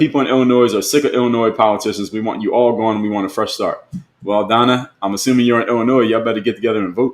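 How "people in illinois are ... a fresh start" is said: normal talking voice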